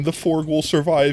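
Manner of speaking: ordinary talk, nothing marked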